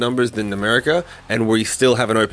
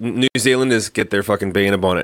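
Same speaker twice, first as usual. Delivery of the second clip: ordinary delivery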